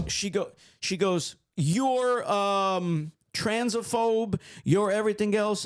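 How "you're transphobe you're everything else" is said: put-on heated, accusing yelling with stretched filler. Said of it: "she's yelling at me".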